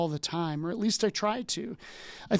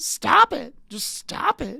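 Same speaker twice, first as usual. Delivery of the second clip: put-on high, rough, drawn-out screaming yell; 8 semitones higher, 4 dB louder than usual. Imitating a counselor in a sketch, Bob Newhart screaming.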